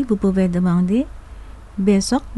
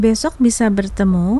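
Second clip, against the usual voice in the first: pitch climbs at end on bertemu. Indonesian lesson on asking a question, rising pitch on bertemu. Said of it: "terminez votre phrase avec une intonation croissante".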